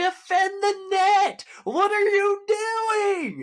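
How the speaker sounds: loud, high yelling, drawn out. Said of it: "as I yell at the defense".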